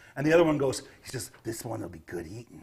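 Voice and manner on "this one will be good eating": low, soft, growling, snarling goblin voice. Voicing a second goblin in a group, in a snarling goblin voice. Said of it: "they will make little sharp growls and snarls".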